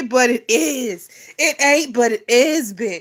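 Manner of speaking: slow speech laced with laughter. Admitting the situation is funny after apologizing for it, laughing while talking. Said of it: "I'm sorry for laughing".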